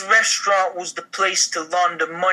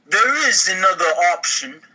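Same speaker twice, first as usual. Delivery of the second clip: put-on New York accent, fully sustained; 3 dB louder than usual. Playing a character in a role-play scene, in a New York accent. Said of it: "New York accent".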